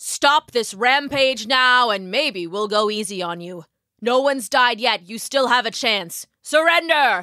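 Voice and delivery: authoritative, commanding heroic delivery. Narrator reads a figure in Firefly armor addressing the monster above, commanding voice. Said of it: "the commanding voice that issued from the Firefly armor".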